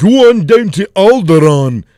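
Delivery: very loud, booming, slow, drawn-out bad Scottish accent. Joking about Fantasy Day at the Renaissance Fair, in a bad Scottish accent. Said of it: "I'm fucking talking in shit ass fucking Scottish accents".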